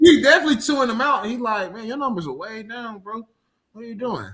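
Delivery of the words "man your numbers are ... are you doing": soft, calm scolding tone, put on. Quoting a character who scolds someone, imitating calm scolding. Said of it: "he don't raise his voice".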